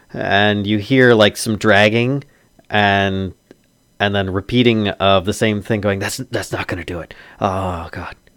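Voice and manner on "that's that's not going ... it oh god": soft, exasperated, frustrated mutter. Voicing a frustrated man behind a door, speaking to himself: frustrated muttering to himself. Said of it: "a voice sounds very frustrated".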